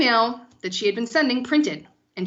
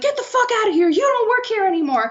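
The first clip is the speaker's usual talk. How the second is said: put-on scream, higher pitch; 12 semitones higher, 4 dB louder than usual. Retelling a boss confronting an employee over an email: imitating someone screaming. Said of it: "screaming at her".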